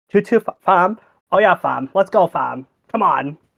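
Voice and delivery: put-on Toronto accent, overdone and trying too hard. Making fun of a rich kid trying to talk like Toronto, mocking a Toronto accent. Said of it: "It's a Toronto accent".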